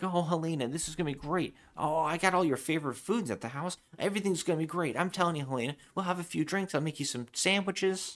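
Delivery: fawning, groveling, high sweet talk. Recapping a plot, acting out a man's lines to the woman, mock groveling. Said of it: "he's like groveling at this point".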